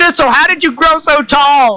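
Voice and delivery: speaking far too loud. Playing a character who talks to thistle: speaking way too loud. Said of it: "everything I say sounds like I'm yelling".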